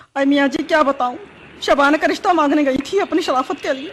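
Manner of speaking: tearful speech through sobs, crying. Asked by a man why she is crying, a woman answers: crying while talking. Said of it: "क्यों रो रही हो?".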